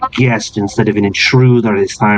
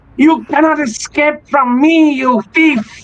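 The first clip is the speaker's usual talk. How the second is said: very high, hostile cat-creature voice. Voicing the Tabaxi chasing a fleeing intruder out the door: hostile Tabaxi pursuer.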